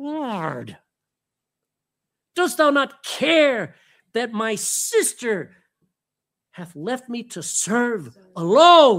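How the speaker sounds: through clenched teeth, complaining, "Lord" drawn out. Retelling a woman complaining to Jesus about her sister: mimicking clenched-teeth speech. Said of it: "I can just hear her clenched teeth".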